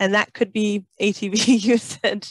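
laughing while speaking the words.

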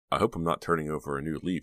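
plain

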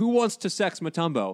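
mock high, booming, big bellow. Telling a story about an NBA player walking into a bar, retelling his bellow. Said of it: "and bellowed".

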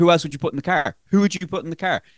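play-acted snarky, defensive tone. Retelling how he kept pressing her on who to put in the car, mock-stroppy and snarky. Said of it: "he got really stroppy and like real snarky and defensive".

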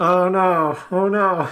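high, loud dismayed groan. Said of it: "I was just like".

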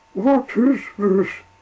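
very high, shrill, trembling voice. An old engine wakes to find himself moving alone: shaky. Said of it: "he asked shakily".

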